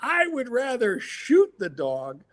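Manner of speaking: put-on furious, high, swooping angry screaming rant. Retelling what a man screamed at the speaker: retelling a scream. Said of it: "he starts screaming at me".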